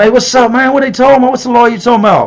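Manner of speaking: loud, high-pitched yelling.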